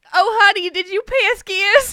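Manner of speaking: mock New Jersey accent. Joking about a regional habit: New Jersey accent impression. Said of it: "That's totally a New Jersey thing".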